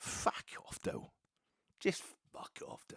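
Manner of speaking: put-on, breathy, pointed, jeering stage whisper. Retelling a fan behind them heckling a player taking a corner: imitating a loud jeer, not shouting. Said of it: "not shouting it, but at the same time making sure everybody else could hear".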